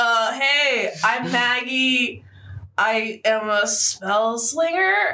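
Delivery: mock drunken tipsy speech. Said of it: "I'm really drunk".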